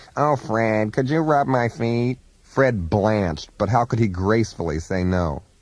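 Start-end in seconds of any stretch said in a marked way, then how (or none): 0.2-2.2 put-on whiny, nasal voice. Retelling how Edith Massey asked a favor: Edith Massey's whiny nasal voice. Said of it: "whine in her wonderfully nasal voice".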